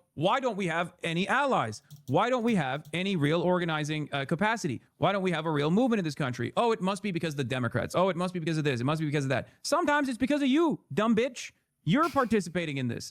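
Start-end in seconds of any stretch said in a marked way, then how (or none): none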